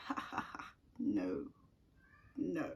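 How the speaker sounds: laughing it off together as a group. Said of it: "they laughed in synchrony".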